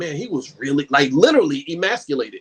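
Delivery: plain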